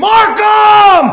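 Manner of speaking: loud, high-pitched shouting.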